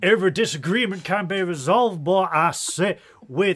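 loud, blustery, cartoonish Southern drawl, belted out. Playing with voices, the speaker slips into a Foghorn Leghorn voice. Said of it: "why do I sound like fog on?".

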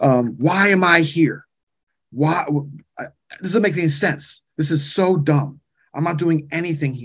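upset, complaining outburst. Retelling a younger man complaining to the speaker, imitating an upset complaint. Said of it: "and he was so upset".

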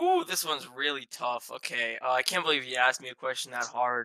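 heavy sarcasm, laid on thick. Answering a request to name three players on a team: sarcastic. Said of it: "You're being sarcastic".

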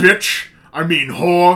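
put-on voice, drawn out slowly and loud. Retelling a friend acting like Sean Connery: imitating Sean Connery. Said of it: "he was acting like Sean Connery".

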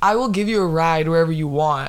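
plain

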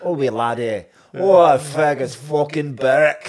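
loud, rough attempt at a Scottish accent. Discussing a player for Scotland, saying his name in a Scottish accent. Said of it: "but I can't do a Scottish name".

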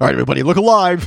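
acted, playful, joking delivery. Telling of a gathering when someone is arriving, retelling a joking announcement to everyone. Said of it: "so I jokingly said".

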